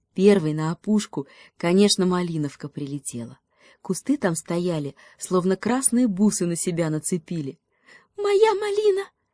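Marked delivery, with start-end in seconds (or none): 8.2-9.1 very high, tiny, squeaky birdlike cry. The robin, first to reach the ripe raspberries, claims them: squeaking. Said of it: "пропищала малиновка".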